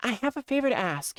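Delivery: hushed whisper. A character asking another character for a favor, whispering. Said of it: "why are we whispering?".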